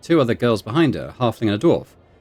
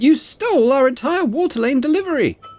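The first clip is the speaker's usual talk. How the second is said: sharp barked words, much higher pitch; 3 dB louder than usual. The same woman turns on another character, barking out. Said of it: "turns to Rollo to bark out".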